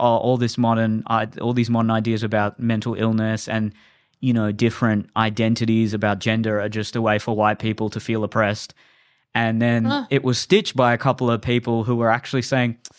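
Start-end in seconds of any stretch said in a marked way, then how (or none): none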